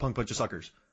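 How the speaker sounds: fast, quick delivery. Showing how a censored movie swear line is said: said fast. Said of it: "'cause you say it fast".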